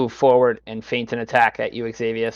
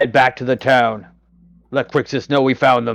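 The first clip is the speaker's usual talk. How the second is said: loud, shouted, yelled delivery; 6 dB louder than usual. Voicing an enemy telling a comrade to run back to town: yelling an order. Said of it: "this guy will yell".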